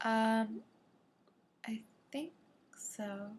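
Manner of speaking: very soft whisper. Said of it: "He goes".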